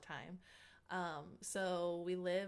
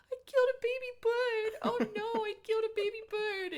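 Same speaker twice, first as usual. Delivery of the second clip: very high, loud mock sobbing wail; 11 dB louder than usual. Retelling how a little brother cried after breaking bird eggs: imitating someone crying. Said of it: "he started crying".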